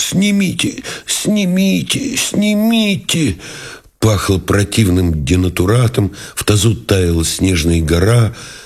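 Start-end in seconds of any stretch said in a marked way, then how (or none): 0.0-3.4 very high groan of pain. Reading a novel aloud, voicing a lieutenant who has collapsed: moaning. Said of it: "простонал".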